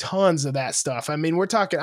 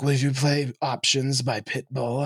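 put-on whisper, lower; 4 semitones lower than usual. Retelling a girl's request at the dance: imitating a whisper. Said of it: "whispers in my ear".

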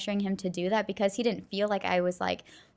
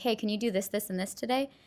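mock gently sweet, kind tone. Retelling asking a spouse to do chores: imitating a kind, sweet request. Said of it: "In a very kind way and in a sweet way".

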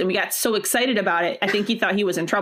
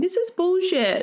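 put-on little kid voice, much higher; 11 semitones higher than usual. Describing a social media voiceover meme, quoting it in little kid voice. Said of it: "the little kid voice and they're going".

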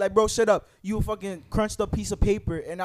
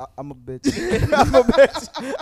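mock very slow, swooping, humbled groveling voice; 4 semitones higher, 7 dB louder than usual. Retelling how someone begged after being threatened: imitating someone groveling. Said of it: "kissing feet so fast".

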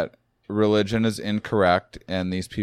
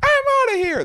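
put-on very high, loud, squealing little girl voice; 5 dB louder than usual. Acting out what you'd say before storming off, in a little girl voice. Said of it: "That's my little girl impression".

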